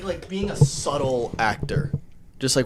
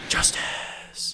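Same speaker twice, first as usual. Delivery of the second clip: breathy put-on superhero voice, quieter. Showing another speaker how to keep it breathy: breathy Batman voice. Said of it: "You just keep it breathy like that".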